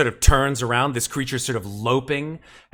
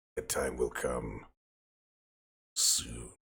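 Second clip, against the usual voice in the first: very quiet, soft creature voice; 13 semitones lower, 12 dB quieter than usual. Voicing a creature that turns back to the party: voicing the creature. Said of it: "It narrows its eyes and says".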